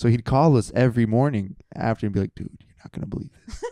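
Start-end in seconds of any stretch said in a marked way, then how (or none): 2.4-3.6 put-on whisper, lower and quieter. Retelling a friend's morning call to the others: imitating a friend whispering. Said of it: "he'd be whispering because she's in the room still".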